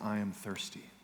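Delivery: quiet whispering. Preaching about the crucifixion, the speaker acts out the words from the cross, retelling a whisper. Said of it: "he whispers".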